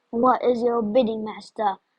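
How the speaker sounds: deep, low, unearthly, eerie voice. Reading a story, a talking monkey answers Sabrina in a deep, unearthly voice. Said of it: "it asked in a deep, unearthly voice".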